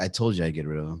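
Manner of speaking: secretive, confiding tone, as if telling a secret. Retelling what a woman said on the couch: imitating a secretive tone. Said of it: "she said it like it was a secret".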